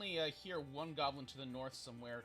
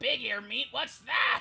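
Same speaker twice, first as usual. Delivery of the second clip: distant goblin yell, higher, louder, slower; 9 semitones higher, 13 dB louder than usual. Game master voicing one of the goblins, calling from a distance: distant goblin yell. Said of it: "one of the goblins yell distantly".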